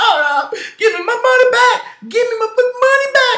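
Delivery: play-acted, very high, tearful, crying wail. Imagining being the player whose contract got erased: imitating crying. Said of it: "I would have cried".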